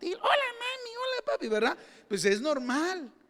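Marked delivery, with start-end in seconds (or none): 0.1-1.5 put-on very high, teary, tiny little kid voice. Describing boys before their voice changes, imitating a little child's voice. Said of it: "una vocecita así de niño infantil".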